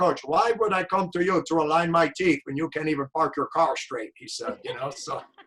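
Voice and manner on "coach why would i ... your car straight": put-on quick, snappy delivery in a Romanian accent. Retelling a man's comeback to the coach, in a romanian accent. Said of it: "with his Romanian accent".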